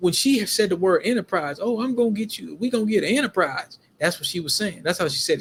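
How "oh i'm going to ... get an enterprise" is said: put-on slight country accent, pitched up. Recounting a discussion, quoting how she said it in a little country accent. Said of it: "She had a little, act, little country accent".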